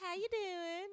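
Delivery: fake charming Southern accent. Showing how they'd greet someone, with put-on southern hospitality. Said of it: "put on my little Southern hospitality".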